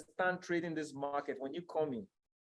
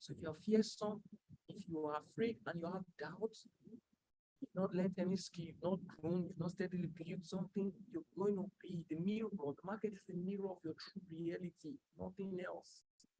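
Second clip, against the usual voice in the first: hushed, gentle, kind, soft and quiet; 2 semitones higher, 7 dB quieter than usual. A speaker addressing listeners, talking low. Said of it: "I'm talking low".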